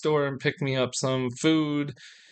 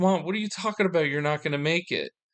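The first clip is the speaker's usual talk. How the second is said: put-on panicked voice, higher; 3 semitones higher than usual. Retelling talking to a mother who feels ill: retelling own panicked plea. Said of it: "And I started panicking".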